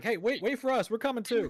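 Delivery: high, loud shouting across a distance. A game master voices two characters calling after someone walking away: shouting out. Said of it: "kind of shout out like".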